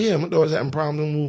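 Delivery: proper, polite, businesslike put-on professional voice. Parent retelling how she asked to see her daughter, putting on her professional voice. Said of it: "I'm putting my professional voice on".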